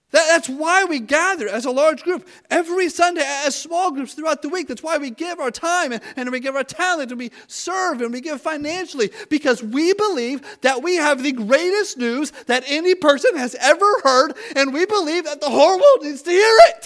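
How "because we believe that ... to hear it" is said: voice cracking with excitement. Addressing the church congregation about why they gather, excited, voice cracking. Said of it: "My voice cracks when I get a little too excited".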